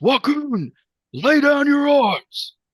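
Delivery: very high, booming, drawn-out voice. Game narrator voicing a figure ordering a crowd to lay down arms: booming voice. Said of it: "you hear his voice boom above the crowd".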